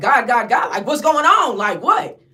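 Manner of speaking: frantic yelling. Speaker retells yelling at a crying friend during chaos: retelling a frantic yell. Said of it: "So I'm yelling at Terry".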